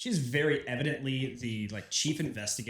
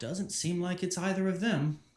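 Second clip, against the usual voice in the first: self-satisfied, knowing, smug, pitched-up tone; 7 semitones higher than usual. A game narrator voices a woman looking at the guard: smug tone. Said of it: "looks at the guard sort of with a smug tone".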